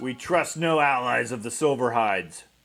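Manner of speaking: rough, loud, gravelly voice. A hidden figure calls out from inside the trees; gravelly voice. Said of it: "you hear a gravelly voice from inside the trees say".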